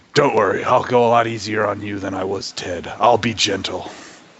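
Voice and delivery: mock-smug put-on voice. Imagining the meeting with Dixie Carter, doing a smug Vince McMahon impression. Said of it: "The shit-eating grin".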